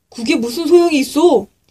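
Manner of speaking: rough, challenging tone. Told to lower the big sail, a man asks back, asked roughly. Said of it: "그 사람이 거칠게 물어보았어요".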